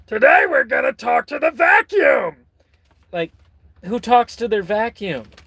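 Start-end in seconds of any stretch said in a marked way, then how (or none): 0.1-2.3 very high, dainty voice. Imitating how Pee-wee Herman talked: Pee-wee Herman impression. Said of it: "talked like this".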